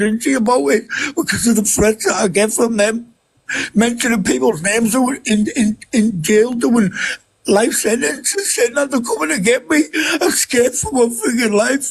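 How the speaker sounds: tearful, weeping, speaking through tears. A dad, whose child tells him to calm down, speaks while crying. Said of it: "Don't be crying".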